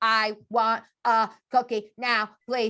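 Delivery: flat, mechanical robot monotone. Imitating a boy who only uses one phrase, the speaker quotes him in a robot voice. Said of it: "Do I not sound like a robot?".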